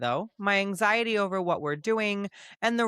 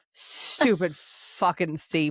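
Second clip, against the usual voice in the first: put-on slightly drunk voice; 3 semitones lower than usual. Voicing a seasick character cursing the sea: acting kinda drunk. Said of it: "picture her saying it like she's kinda drunk".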